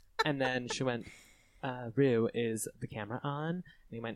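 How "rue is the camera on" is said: low, deep, put-on heiress voice. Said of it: "she talked in a low voice".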